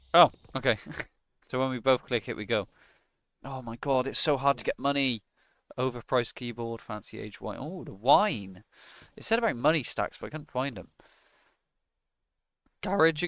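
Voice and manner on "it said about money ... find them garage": fast speech, voice breaking and cracking. Playing a game with a partner, searching for money: voice keeps breaking. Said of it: "Why does my voice keep breaking?".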